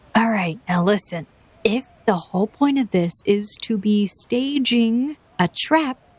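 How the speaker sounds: hushed, carrying stage whisper, voice dropped low. Snow speaks to the group, not very discreetly, in a stage whisper. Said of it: "and she lowers her voice".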